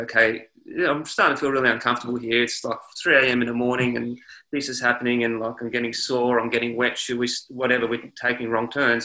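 plain

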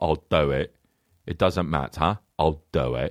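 very low, slow, unhurried, drawn-out deadpan delivery. Retelling how the actor always accepts roles: Michael Caine impression. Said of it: "Michael Caine was just like".

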